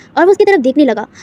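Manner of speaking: ordinary delivery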